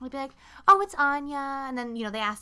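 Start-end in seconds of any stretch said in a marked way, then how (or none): 0.7-1.6 very loud, put-on, fake-nice customer service voice. Retelling telling customers a name, in a put-on customer service voice. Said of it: "put on your customer service voice".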